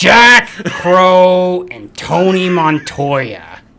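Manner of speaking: very slow, high, creepy doll voice, drawn out. On a podcast, the speaker says character names, in a Chucky voice. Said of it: "Should I do the Chucky, the Chucky voice?".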